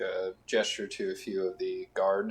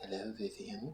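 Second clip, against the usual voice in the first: hushed, very quiet, silky smooth whisper; 9 dB quieter than usual. Voicing a voice behind Vivian greeting her, in a whisper. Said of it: "you kind of a whisper".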